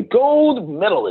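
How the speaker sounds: lively, emphatic pitch swing on gold medalist. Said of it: "you gotta need some inflections".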